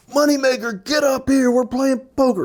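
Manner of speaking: put-on very high, merry, slightly drunk voice. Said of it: "this guy's a little bit inebriated".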